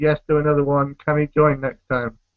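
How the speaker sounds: ordinary delivery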